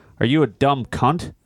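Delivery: normal talking voice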